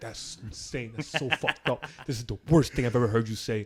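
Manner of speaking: imitated angry, mad tone. Retelling a friend's reaction to a nickname: imitating a mad friend. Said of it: "And he got so mad".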